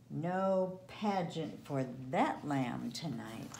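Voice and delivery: plain reading voice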